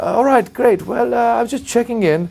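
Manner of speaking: put-on slight British accent. Retelling a phone call from a king: imitating a slight British accent. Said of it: "he's got a little British accent".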